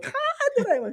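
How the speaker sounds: very high, tittering giggle. Retelling how she giggled at the assistant: imitating a giggle. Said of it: "she'd giggle like".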